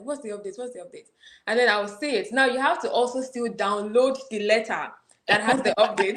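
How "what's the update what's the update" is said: anxious, hurried, very soft and hushed mutter. Describing rushing to check an application update, retelling anxious rushing. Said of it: "I will rush to the application page like".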